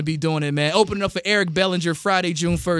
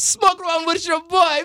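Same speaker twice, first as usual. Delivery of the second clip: bad put-on Jamaican accent, much higher; 12 semitones higher than usual. Joking around on 420, in a terrible jamaican accent. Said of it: "My Jamaican accent is terrible".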